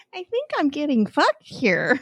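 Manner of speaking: put-on sweetest little old lady voice, high and swooping. Speaker retelling a phone call with a member, imitating a sweet old lady. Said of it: "In the sweetest, most old lady tone you could possibly have".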